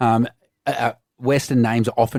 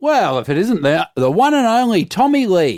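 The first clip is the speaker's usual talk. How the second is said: put-on broad, thick Australian accent, loud and high; 8 semitones higher, 5 dB louder than usual. Retelling meeting a man, the speaker quotes his opening line in a broad Australian accent. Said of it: "he said in a broad Australian accent".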